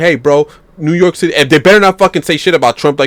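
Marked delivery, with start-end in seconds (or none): 0.0-1.3 mock rowdy street shout, held in, mildly yelled. Imagining New Yorkers revolting: imitating people yelling.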